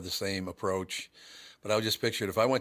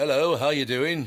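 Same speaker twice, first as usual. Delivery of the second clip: put-on, fake English accent; 5 semitones higher, 7 dB louder than usual. Showing how being somewhere changes your accent: put-on english accent. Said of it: "See, I'm in England".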